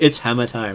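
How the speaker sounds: soft, hushed half-whisper. Narrating a hammer hitting a character, a voice half-whispers in its ear: half-whispering in your ear. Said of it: "whisper to you in your ear".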